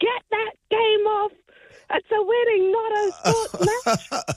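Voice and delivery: shrill, very high-pitched screaming. Retelling the bride's mother shouting during the wedding speeches, retelling a scream. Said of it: "yelled and screamed".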